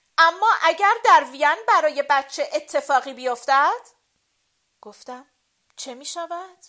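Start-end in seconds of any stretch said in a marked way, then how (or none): 0.2-3.8 very loud, raised outcry with voice lifted high. A woman answers the narrator's gentle remark, said loudly. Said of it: "با صدای بلند گفت".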